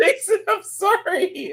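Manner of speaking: mock crying, high, slow fake sob.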